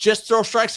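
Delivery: high, exasperated, impatient shouting. Retelling what she yelled at them mid-game: retelling a yell. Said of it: "she yelled at me".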